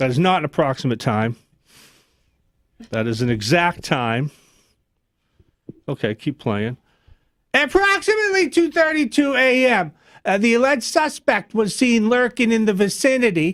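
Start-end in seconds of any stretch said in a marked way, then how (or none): 7.5-13.4 put-on Boston accent, pitched up. Impression of a Boston Police press conference, put-on Boston accent. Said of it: "Here's my impression of Boston Police press conference".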